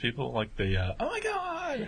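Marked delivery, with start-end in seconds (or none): 1.0-1.9 mocking squeal, pitched very high. Describing people seen at work, imitating those people's voice. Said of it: "he kinda did that voice".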